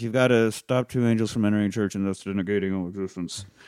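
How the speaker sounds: soft, low-effort mumble. Retelling a scene, quoting a character's message: imitating a mumbled line. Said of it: "kinda mumbles it as he takes a shot".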